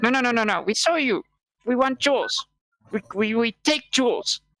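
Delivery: very cute, adorable goblin creature voice. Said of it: "in a very cute goblin voice".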